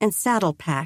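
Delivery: plain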